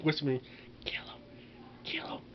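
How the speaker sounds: soft whispering.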